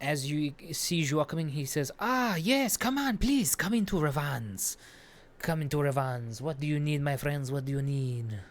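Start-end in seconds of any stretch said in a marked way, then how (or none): 2.0-8.4 cat-like character voice. Speaker voices a character welcoming Joa into Revans, Khajiit voice from Skyrim. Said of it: "He sounds like Khajiit from Skyrim".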